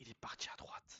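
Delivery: soft, unvoiced whisper.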